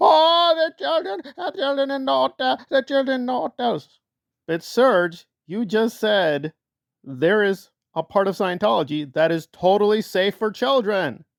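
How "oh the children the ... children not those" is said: derisive mocking mimicry, higher-pitched voice. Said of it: "that doesn't make any sense because Serge".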